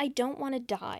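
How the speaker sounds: put-on tearful, crying voice. Retelling a plot where a character starts crying: imitating crying. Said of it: "Henry starts crying".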